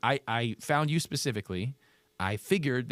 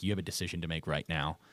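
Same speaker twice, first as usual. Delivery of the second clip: put-on fatherly lecturing tone, lower and quieter; 7 semitones lower, 5 dB quieter than usual. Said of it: "he's just talking to her like a dad".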